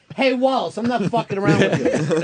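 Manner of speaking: stern, scolding voice.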